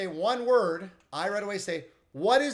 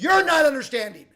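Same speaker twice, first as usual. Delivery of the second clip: sharpened raised voice, pitched up and loud; 6 semitones higher, 6 dB louder than usual. Retelling an argument with a woman in her car: retelling a raised voice. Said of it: "to- my tone like that".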